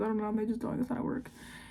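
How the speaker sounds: rushed, fast talk.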